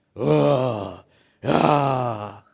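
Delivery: low, thick demon voice, possessed-sounding. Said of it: "hablando con voz gruesa".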